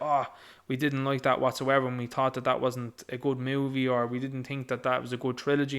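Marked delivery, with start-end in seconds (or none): none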